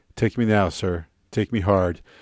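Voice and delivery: mock deadpan, unromantic flat delivery. Retelling a scene where Zoe looks at him and speaks; imitating Zoe's unromantic tone. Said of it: "in a very unromantic tone says".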